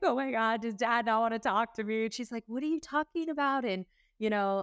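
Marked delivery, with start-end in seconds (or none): 0.0-2.1 put-on, crying, tearful delivery. Recalling a phone call to a stepmom, retelling own crying. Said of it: "and I'm like crying".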